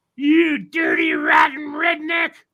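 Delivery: very high, shrill, swooping, drawn-out furious screech. Retelling a man's wife leaning out the car window at you, imitating her screaming. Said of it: "screaming at me".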